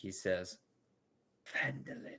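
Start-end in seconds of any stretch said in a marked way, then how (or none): 1.5-2.2 very quiet murmur, whispered almost to oneself. Voicing a character who speaks almost to himself: very quiet tone. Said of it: "in a very, very silent tone, almost speaking to himself".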